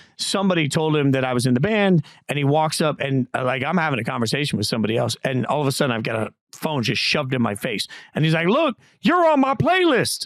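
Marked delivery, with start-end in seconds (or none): 8.5-10.3 put-on country accent, very high. Retelling how a drunk man shoved his phone at a band member, in a fake country accent. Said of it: "didn't have a country accent like that, but that's how I'm saying it".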